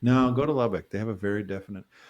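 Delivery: ordinary delivery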